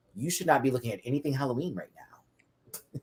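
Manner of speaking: soft whispered aside.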